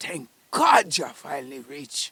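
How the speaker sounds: put-on woman's voice, very loud, heavy Bahamian accent. Retelling a voice heard on landing at the airport: imitating a thick Bahamian accent. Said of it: "a female voice with a thick Bahamian accent".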